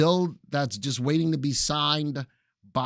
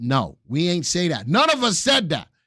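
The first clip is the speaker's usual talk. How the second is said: full-on loud shouting, building up and rising; 3 semitones higher, 5 dB louder than usual. Streamer telling viewers nobody said to leave Robinhood, yelling. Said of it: "Yes, I'm yelling".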